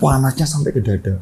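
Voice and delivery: ordinary talk, nothing marked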